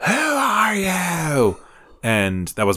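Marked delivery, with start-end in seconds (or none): 0.1-1.6 very high scream, drawn-out you. Retelling a horror movie scene with the nun: Vera Farmiga impression screaming. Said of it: "my best, uh, Vera Farmiga impression".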